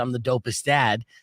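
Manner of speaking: normal talking voice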